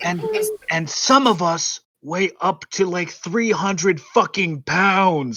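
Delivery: loud stage whisper. Voicing a character calling to two others on a bridge: loud whisper. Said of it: "loud whispering".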